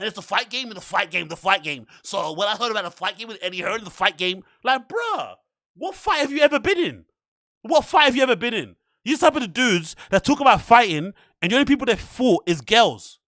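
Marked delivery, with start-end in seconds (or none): 0.0-1.9 mocking, confident know-it-all tone, quieter. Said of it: "these guys talk with such".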